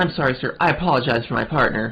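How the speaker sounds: ordinary delivery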